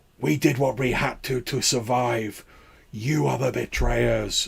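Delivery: rasping lifeless voice. Retelling a game scene where the Harbinger shout back, raspy dead Harbinger voice. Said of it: "in these sort of like raspy, like dead voices".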